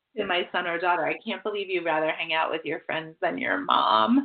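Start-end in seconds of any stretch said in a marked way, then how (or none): 1.1-4.3 mock heavy sarcasm, put-upon, guilt-tripping tone. Retelling a line said to a child in a sarcastic way: imitating own sarcastic line. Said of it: "in a sarcastic way".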